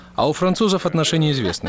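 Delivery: ordinary talk, nothing marked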